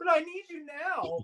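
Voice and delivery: put-on small girlish pleading voice, very high-pitched. Retelling own plea to a departing companion: imitating own past plea like a little girl. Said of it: "like a little girl".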